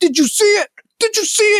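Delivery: very high, pumped, hyped-up jock whoop. Mocking a jock gamer from a commercial: imitating a jock gamer cheering. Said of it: "And then he's like".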